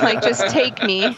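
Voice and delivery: normal talking voice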